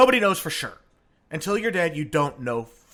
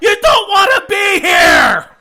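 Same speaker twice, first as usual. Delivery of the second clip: shrill, very loud, high, drawn-out full-volume scream; 11 dB louder than usual. Retelling a joke about the dead looking up at us: imitating someone screaming.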